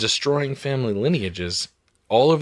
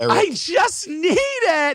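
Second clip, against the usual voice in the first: mock crying, higher. Retelling what a crew member on the pilot said: imitating someone crying. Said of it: "He's crying".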